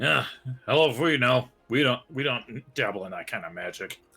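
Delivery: talking through a full, stuffed mouth. Answering players at the table, talking with mouth full. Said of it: "just shoved a candy bar in my mouth".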